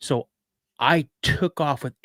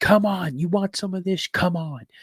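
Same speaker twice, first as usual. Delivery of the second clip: high-pitched, mock taunting scream; 5 semitones higher than usual. Retelling facing a creature with knives: retelling a scream at a creature. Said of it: "I don't know how long I'm screaming at this thing".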